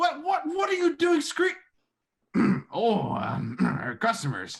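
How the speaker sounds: put-on very high, loud, grumbling, harrumphing old man voice. Describing an older man shuffling out of the back office, in a harrumphing old voice. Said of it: "he's kind of like harumphring".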